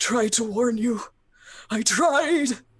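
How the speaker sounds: put-on high, loud, groaning, whimpering old man voice. A game master voices the old man downstairs, whimpering old man. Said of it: "the old man sort of making like whimpering and groaning noises".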